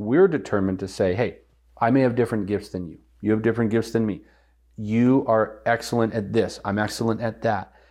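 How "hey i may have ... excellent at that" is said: ordinary talk, nothing marked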